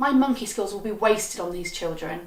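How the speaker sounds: plain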